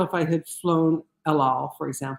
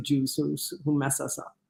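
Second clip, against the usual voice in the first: ordinary delivery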